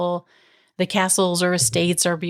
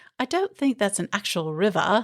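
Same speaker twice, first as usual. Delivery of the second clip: badly attempted, put-on British accent; 2 semitones higher than usual. Retelling what a girl's dad said to her, in a bad British accent. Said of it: "my British accent is terrible".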